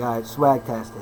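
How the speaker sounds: usual speaking voice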